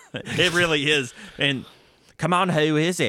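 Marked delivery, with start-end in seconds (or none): 1.4-3.1 put-on rural Southern US woman's voice, higher pitch. Retelling what a woman said in the story, Lola Stone voice. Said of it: "I thought you were doing a redneck lady's voice".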